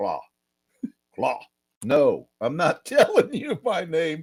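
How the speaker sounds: animated, swooping bullfrog voice, rising. Retelling a reply heard after asking a name: imitating a low bullfrog deep voice. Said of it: "I get this low bullfrog deep voice that goes".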